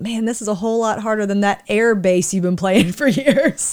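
acted-out chuckling through the words, teasing. Retelling teasing someone who struggles with bass, retelling a laughing remark. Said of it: "And I'm laughing, going".

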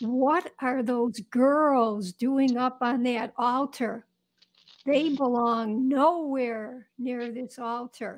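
put-on, gruff, rough-edged scolding tone. Retelling how a monsignor objected to girls on the altar, imitating a gruff voice. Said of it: "I hear this gruff voice".

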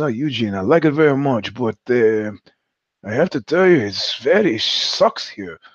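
put-on Italian-accented English, Southern Italian accent. Recounting a chat with a friend, do Nini's Southern Italian accent. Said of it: "He moved from Southern Italy to New York".

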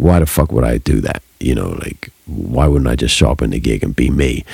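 low, creaky grumbling voice.

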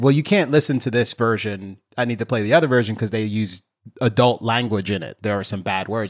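plain

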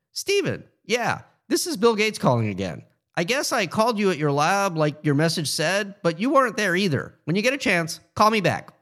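squeaky, distracted, scattered, high-pitched voice. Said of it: "A somewhat squeaky and distracted voice said".

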